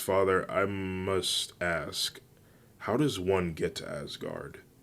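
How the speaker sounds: plain reading voice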